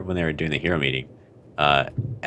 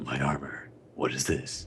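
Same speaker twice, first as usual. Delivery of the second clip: slow, drawn-out, awestruck, dumbfounded character voice; 3 semitones lower, 9 dB quieter than usual. Acting out Metal Knight's reaction to his robot being punched: Metal Knight voice. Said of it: "I don't know why I gave him that voice".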